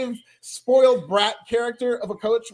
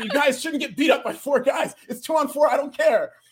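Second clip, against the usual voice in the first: heated, yelling, angry scolding; 4 semitones higher than usual. Retelling how a wrestler yelled at the Creed brothers: imitating someone yelling. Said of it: "he's yelling at the Creed brothers".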